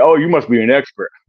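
mock sarcastic, jabbing tone. Speaker quotes people who call the speaker an expert, imitating a sarcastic tone. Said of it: "in a sarcastic way".

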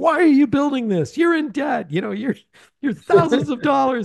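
very high, shrill screaming rant. Describing a movie scene, the speaker acts out the banker's rant, retelling a scream. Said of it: "he's screaming and yelling".

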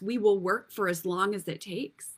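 ordinary talk

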